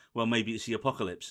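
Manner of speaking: mock deadpan, flat delivery. Speaker describing a trailer acts out a woman's line, imitating a deadpan delivery. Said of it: "Like completely deadpans it".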